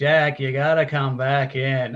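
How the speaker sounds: badly acted, awful, very slow line reading. Mocking an actor's awful delivery of a movie line: imitating awful line delivery.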